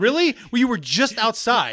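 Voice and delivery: loud, high, exasperated scolding.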